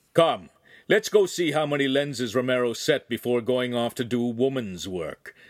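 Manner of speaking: ordinary delivery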